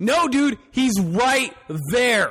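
escalating, serious, insistent tone. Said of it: "And that's how I said it".

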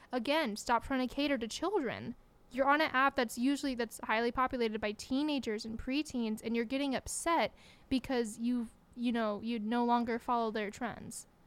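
ordinary delivery

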